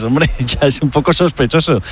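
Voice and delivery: ordinary talk, nothing marked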